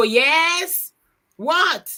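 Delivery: irritated and annoyed, "yes" drawn out and high. Showing the wrong way to answer when someone calls for you: annoyed reply. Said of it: "You don't go".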